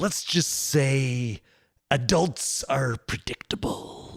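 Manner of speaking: slow, unhurried delivery with "say" drawn out.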